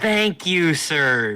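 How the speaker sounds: condescending, talking down. Voicing a character thanking Graven after taking payment: condescending. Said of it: "very condescendingly".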